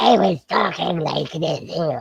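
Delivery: mock strained, shut-down voice. Retelling hours of recording player names, imitating own worn-out voice. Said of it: "I just shut your voice down".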